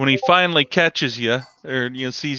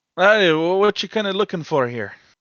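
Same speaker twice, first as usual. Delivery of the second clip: put-on middle-aged dwarf voice, much higher; 6 semitones higher than usual. Narrator voices the shopkeeper greeting a customer who walks in: middle-aged dwarf voice. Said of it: "He's a middle-aged dwarf".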